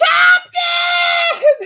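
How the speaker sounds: high, loud crying scream, wailing. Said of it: "we all hear this scream and this cry".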